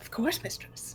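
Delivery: hushed, breathy, whispery skeleton voice. Voicing a skeleton bartender who greets his mistress: voicing a skeleton bartender. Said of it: "And he, without hesitation, steps on it".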